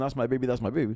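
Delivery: ordinary delivery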